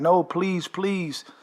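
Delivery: put-on pleading, begging voice. Retelling how the wife reacted after he cursed their house, imitating someone begging. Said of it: "the wife is begging and pleading, like".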